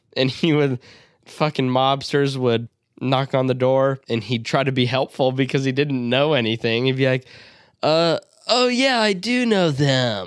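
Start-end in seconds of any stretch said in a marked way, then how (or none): 7.8-10.2 very slow, high-pitched, stoned surfer drawl. Retelling a movie scene about a stoner on a couch: Brad Pitt stoner surfer voice. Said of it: "mega stoner, talked like a surfer".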